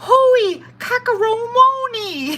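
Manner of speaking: put-on Hawaiian accent, pitched high. In the pool, Val answers the speaker's holy cannoli: imitating Val's Hawaiian-sounding accent. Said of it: "she sounds like she's Hawaiian".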